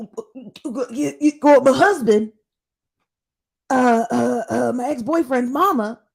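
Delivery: high, loud stammering, tripping over words. Imitating a show guest who stutters while explaining who she met: imitating someone stuttering. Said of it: "why you stuttering?".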